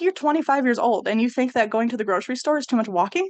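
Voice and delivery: ordinary talk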